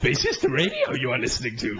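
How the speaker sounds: little sage character voice, swooping sing-song pitch. Doing an impression after saying it might not work anymore: Yoda voice. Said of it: "I used to be able to do quite a good Yoda impression".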